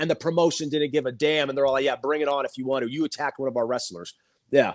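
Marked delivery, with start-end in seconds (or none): none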